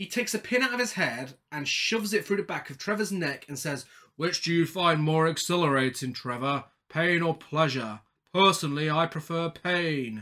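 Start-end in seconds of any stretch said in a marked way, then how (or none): 4.2-10.2 jolly, festive character voice. Quoting Pinhead's line to Trevor, done as a Santa impression. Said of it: "Why are you doing a Santa impression?".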